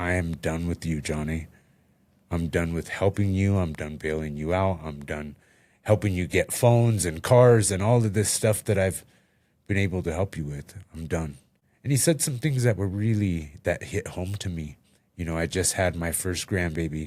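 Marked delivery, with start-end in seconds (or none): none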